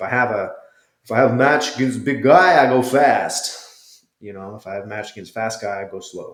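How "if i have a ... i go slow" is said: loud, bad, clumsy put-on Brazilian accent. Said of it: "terrible Brazilian accent".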